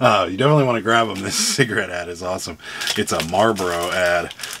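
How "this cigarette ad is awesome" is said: fast words interrupted by laughter. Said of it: "I can't stop laughing at this cigarette ad".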